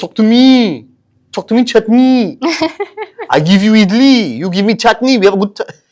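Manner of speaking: over-the-top exaggerated French accent, pitched very high. Trying to get him to respond after he dislikes the accent: put-on french accent. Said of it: "French is not my strong suit".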